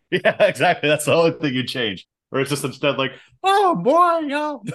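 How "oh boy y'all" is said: bad, very high squealing pig voice. Joking about changing a Muppet film, attempting a Miss Piggy voice. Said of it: "I can't do my Miss Piggy impersonation".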